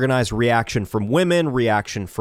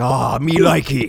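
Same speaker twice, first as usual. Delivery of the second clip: crude, put-on caveman voice; 3 dB louder than usual. Describing men acting like cavemen: imitating a caveman. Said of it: "become cavemen where they just go like".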